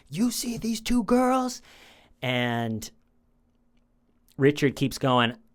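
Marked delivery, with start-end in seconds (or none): 0.1-1.6 shrill, very high, furious angry screaming. Recounting an interrogation, speaker acts out one man screaming at another, retelling a scream. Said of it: "But he's screaming at him".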